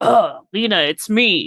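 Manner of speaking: exaggerated put-on deepened voice, very slow. Retelling a scene where JJ tries to sound deeper for Lena, imitating JJ's extra-deep voice. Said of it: "make his deep voice like a little deeper".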